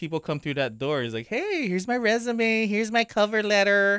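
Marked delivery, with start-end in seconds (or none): 1.3-4.0 very high, put-on nerdy tone. Speaker acts out a job applicant coming through the door, in a nerdy voice. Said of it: "Why are you going to make it sound so nerdy?".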